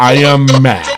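mechanical, robot-style speech, pitched low. Retelling what Big Cass said, the speaker does Big Cass's robotic voice. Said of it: "talking in his robotic voice".

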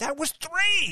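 acted-out, shrill, high, loud, whiny pleading complaint. Retelling a wrestler arguing with the ref: imitating someone whinging at a ref. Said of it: "pleading with him".

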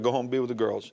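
ordinary talk

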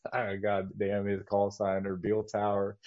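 ordinary talk

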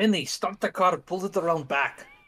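put-on accidental slip into an Austrian accent. Ordering a driver to bring the car around: accidental Austrian accent. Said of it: "I'm Austrian now".

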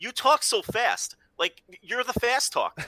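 mock exasperated, put-on weary tone.

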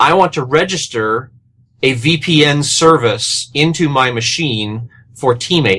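ordinary delivery

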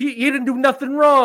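put-on shrill New York accent, very high and loud. Imitating fans reacting to the fallout, in a Larry David-style accent. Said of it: "I don't know why I'm doing this accent".

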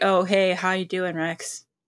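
ordinary talk, nothing marked

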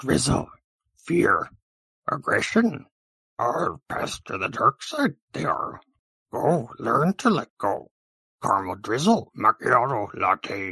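put-on tiny sage voice. Guessing whether something is a drizzle, the speaker tries a Yoda impression. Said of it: "Yoda? I don't think so. Nice try".

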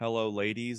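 put-on super creepy voice. Retelling a wrestler's ring entrance line: Val Venis super creepy voice. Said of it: "in his super creepy voice".

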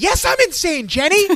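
very high, loud outburst, stretched long. Retelling a TV scene where a character answers if she's insane: imitating Agnes yelling. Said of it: "Agnes just yells".

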